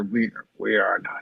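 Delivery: muttering under breath. Speaking as Balasar, looking away from the others: muttering under his breath. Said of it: "under his breath mutter".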